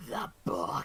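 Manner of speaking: loud, sudden monstrous creature cry. Voicing a creature erupting in flames as it dies: creature yelling. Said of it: "as it just yells".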